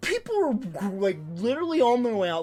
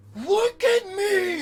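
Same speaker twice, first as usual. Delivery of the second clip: re-enacted bellow, much higher, louder, slower; 6 dB louder than usual. Retelling answering a heckler in a movie theater, to the whole crowd: retelling a bellow. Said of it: "I'm like bellowing it to the whole crowd".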